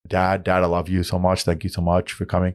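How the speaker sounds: put-on heavy Surrey accent, laid on and kept up. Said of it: "a thick Surrey boy, brown boy accent".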